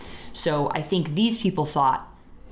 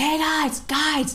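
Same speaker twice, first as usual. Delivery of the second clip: very high yell, acted out; 12 semitones higher than usual. Retelling calling across the street to some guys to catch them, retelling a yell. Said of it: "I was like yelling like".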